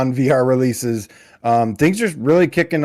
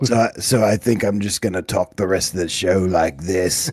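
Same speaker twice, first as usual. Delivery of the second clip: steady put-on British accent; 6 semitones lower, 3 dB quieter than usual. Filling in for someone absent, switching into a British accent. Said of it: "but I can do a British accent".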